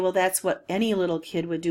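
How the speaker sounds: usual speaking voice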